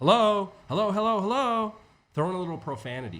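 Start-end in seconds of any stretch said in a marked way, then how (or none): 0.0-1.7 insistent, urgent repeated calling, higher and louder. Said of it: "now say it like you're not listening".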